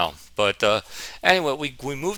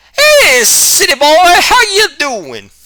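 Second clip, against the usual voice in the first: put-on hillbilly drawl, very high, loud, slow; 12 dB louder than usual. Doing one line as his uncle, the way he greeted him: Billy Bob voice. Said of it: "I'm just going to do this one line as him".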